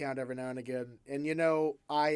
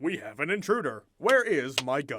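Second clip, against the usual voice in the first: put-on middle-aged suburban American dad voice and accent.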